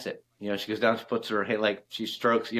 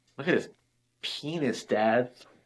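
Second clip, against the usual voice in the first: ordinary delivery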